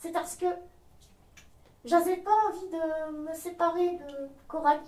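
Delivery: soft, hushed, high, chatty ventriloquist-dummy voice. A ventriloquist's puppet confides in the listeners, ventriloquist puppet voice. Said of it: "sa marionnette [name] (très bavarde et attachante !)".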